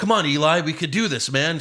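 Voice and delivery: put-on yelling. Retelling a comedian's bit about a boyfriend yelling at football: imitating someone yelling at the tv. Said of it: "he yells at the T V".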